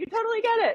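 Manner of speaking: excited and hyper. Agreeing with the other speaker on the podcast: excited and hyper. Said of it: "I'm getting all excited and hyper".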